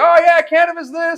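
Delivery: very high, loud, unguarded carefree shouting. Speaker acting out how they talked about cannabis, retelling own shouting. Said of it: "Over here shouting about it".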